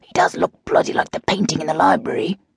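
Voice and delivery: hushed, high hiss under the breath. Holding on to a companion's arm, a character hisses to him. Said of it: "he hissed".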